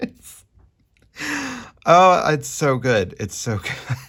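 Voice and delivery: very drawn-out, high, slow speech through laughter. Reacting to an unexpected card picture, laughing while talking. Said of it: "I'm laughing 'cause it's unexpected".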